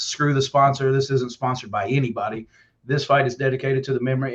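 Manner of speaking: ordinary talk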